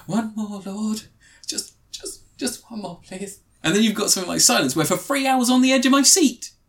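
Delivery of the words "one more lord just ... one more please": breathless, hushed half-whisper under the breath. Imitating an actor's film line: Andrew Garfield half-whispering breathlessly. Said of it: "Andrew Garfield just whispering under his breath".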